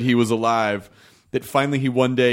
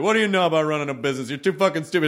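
play-acted casual, unbothered, offhand, dismissive tone; 3 semitones higher than usual. Retelling a grandfather's put-down of a business plan: imitating grandfather's nonchalant tone. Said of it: "he just kinda had this nonchalant".

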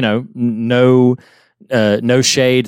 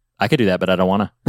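put-on deadpan mutter under the breath, much lower; 4 semitones lower than usual. Describing a cartoon scene, quoting a character's reaction as a retold deadpan mutter. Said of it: "in the most deadpan under his breath kind of way".

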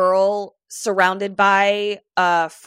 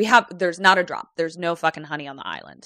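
mock sassy tone with attitude; 3 semitones lower than usual. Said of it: "so much fucking attitude".

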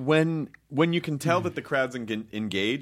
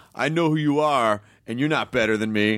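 plain

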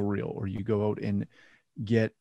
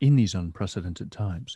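voice dropped much lower; 2 semitones lower than usual. Speaking to Katie, in a lowered voice. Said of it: "I like how you lower your voice when you talk".

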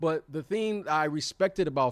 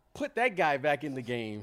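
ordinary talk, nothing marked

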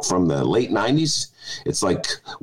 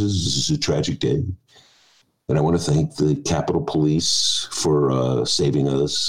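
very low, mock solemn, somber tone; 8 semitones lower than usual. Speaker mimics how they spoke after the insurrection, mock-somber voice. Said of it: "they were I put on their somber voices".

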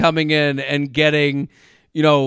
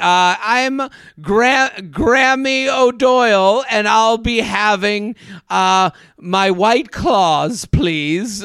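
put-on old lady voice, much higher; 5 semitones higher than usual. Imagining a grandma buying liquor at the store, in Grammy O'Doyle voice. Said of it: "can you imagine?".

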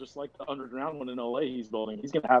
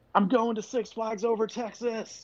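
acted out, very high, wild shrieking scream; 10 semitones higher than usual. Imagining him yelling into the camera, mock screaming. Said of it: "yelled and just screamed".

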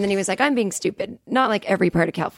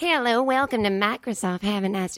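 put-on Southern accent, older woman's voice. Retelling a call with a microsoft support woman: imitating a sixty-year-old southern woman. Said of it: "she sounded like a sixty-year-old Southern woman".

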